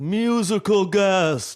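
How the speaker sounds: very high, loud announcer call. Imitating a friend doing an SNL announcer impression: Don Pardo impression.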